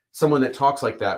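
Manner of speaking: ordinary talk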